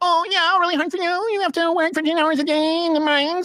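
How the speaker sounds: put-on very high, grating, annoying girl voice.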